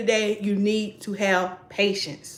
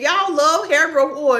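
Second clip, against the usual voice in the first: full-on loud yelling; 7 semitones higher, 5 dB louder than usual. Talking to the audience, yelling at them. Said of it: "I'm yelling at you".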